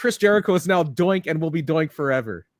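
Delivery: ordinary talk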